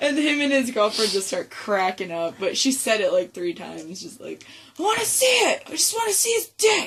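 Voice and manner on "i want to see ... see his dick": shrill, high-pitched, shrieking yell. Retelling what a woman kept yelling, three times over, imitating someone yelling. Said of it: "And she's just yelling it".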